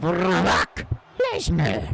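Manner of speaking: animated, swooping pitch swinging through the name. Saying a wrestler's name while commentating a match: Paul Heyman impression. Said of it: "That's my Paul Heyman impression".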